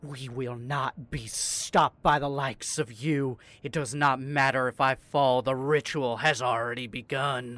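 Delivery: loud, echoed, reverberating voice. Voicing a cultist who points a knife at a player: echoed tone. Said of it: "echoed tone to her".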